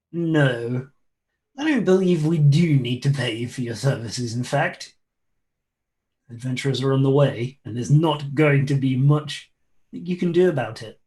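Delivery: snide, imperious, sneering voice, drawn-out no. Storyteller voices an overheard character, in a snide imperious voice. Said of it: "you hear a snide and imperious voice saying".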